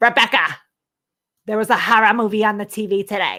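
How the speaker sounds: put-on Long Island accent, "horror" pronounced "hara". Imitating how Bruce says 'horror', Bruce's Long Island accent. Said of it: "that is what they sound like. What Bruce sounds like when he says horror, he goes hara".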